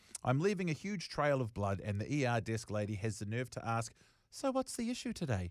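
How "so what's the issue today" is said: very high, breezy, offhand casual tone, acted out. Telling his story, the speaker quotes the ER desk lady's question, mock-casual. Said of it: "Casual as fuck".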